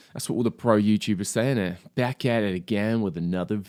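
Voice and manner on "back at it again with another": put-on American accent. Repeating a video intro like pro YouTubers, in an American accent. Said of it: "I don't know why I'm doing a fucking American accent".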